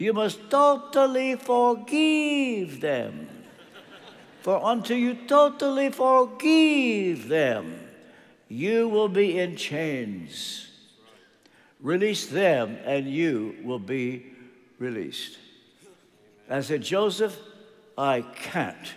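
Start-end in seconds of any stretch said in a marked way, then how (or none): 0.0-15.4 put-on Romanian-accented English. Retelling what Joseph told him when he stopped him, in Joseph's Romanian accent. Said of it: "in his Romanian accent".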